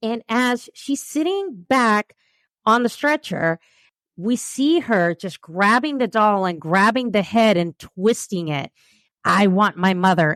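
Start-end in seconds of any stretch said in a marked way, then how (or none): 9.2-10.4 mock angry voice, much lower. Retelling a patient on a stretcher twisting a doll's head, imitating an angry patient. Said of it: "she was like so angry".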